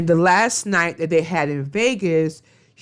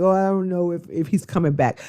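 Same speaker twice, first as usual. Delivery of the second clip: mock tearful voice. Retelling what someone said after he walked out, imitating someone tearing up. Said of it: "Brianna all tearing up".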